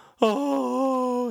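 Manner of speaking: sudden, high, loud howl.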